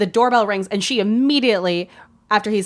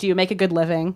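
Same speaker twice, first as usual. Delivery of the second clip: acted fatherly voice. Retelling a scene where he questions Jake, mock grilling like a dad. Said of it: "he's grilling him like a dad".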